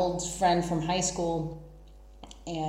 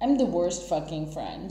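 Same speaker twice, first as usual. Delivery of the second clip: ordinary talk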